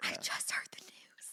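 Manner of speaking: hushed, secretive, secret-sharing whisper. Retelling how church family still whisper the news: imitating someone whispering. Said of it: "why are you whispering like it's a secret".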